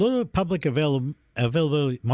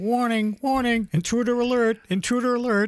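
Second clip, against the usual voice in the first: very high, flat monotone robot voice; 9 semitones higher than usual. Imagining a robot voice announcing an intruder, robot voice. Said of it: "the robot voice going".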